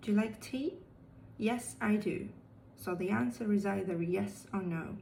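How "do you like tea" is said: question-like rising pitch on tea. Teaching English yes-no questions, rising pitch on tea. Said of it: "this is when we raise our pitch at the end of the question".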